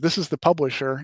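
normal talking voice

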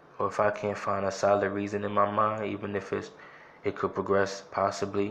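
plain

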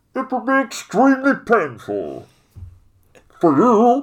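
loud, slow, booming posh upper-class English drawl. Retelling a film scene, imitating Bane: Bane impression. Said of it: "Bane sounds like this sort of upper-class English gentleman".

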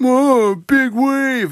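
very high, loud, teasing, mocking voice. Retelling how passing college kids made fun of the speaker, in mocking imitation. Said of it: "they made fun of me".

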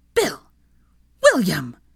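hissed, swooping voice. In a silent pub, a mother calls after her son, hissing. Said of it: "Molly hissed".

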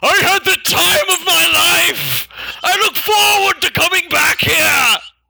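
very high, loud, full-throated, top-of-the-lungs shouting. Half tripping as he turns to wave back at the lady, shouting at the top of his lungs. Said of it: "literally shout at the top of his lungs".

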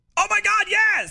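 fake, exaggerated, over-the-top excitement, pitched very high. Told by a co-host to give more excitement, answering with fake over-the-top excitement. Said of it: "I need more from you".

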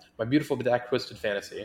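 rushed, rattled off, run together as one word. Reading a pick-em matchup name as one word, said really fast. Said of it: "it's one word, so I have to say it really fast".

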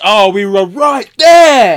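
slow, very loud, drawn-out, rising, booming scream. Retelling a moment from the episode: imitating Charlie screaming. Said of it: "he just screams".

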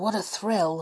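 plain reading voice

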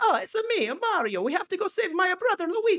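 very high cartoon voice, pitch swooping wildly. Speaker imagining a game hero monologuing for hours; Mario voice. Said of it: "where he's like".

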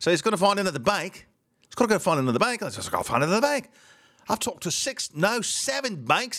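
put-on British accent. Retelling a man's words to an audience, in a put-on British accent. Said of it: "here's British".

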